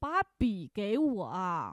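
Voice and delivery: slow, heavier, stern, emphatic, mildly annoyed insistence. Speaker retells how a nurse repeated her request, retelling a slightly angry, emphatic line. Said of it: "就加重语气了，就有点生气了".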